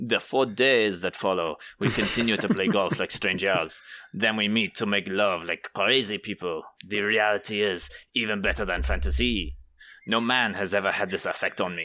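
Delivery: reading aloud in a put-on French accent. Reading a quoted passage aloud, in a French accent. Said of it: "I should do this in a French accent".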